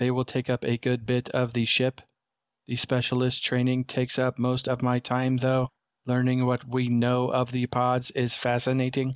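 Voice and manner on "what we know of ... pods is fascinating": ordinary delivery, nothing marked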